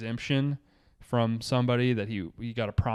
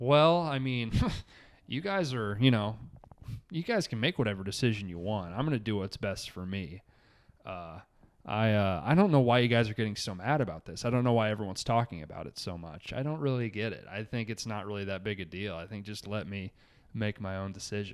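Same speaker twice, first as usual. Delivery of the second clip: smug, patronizing, self-satisfied condescending tone. Mocking how someone talks about his own decision: imitating someone condescending. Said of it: "He's so fucking condescending about it".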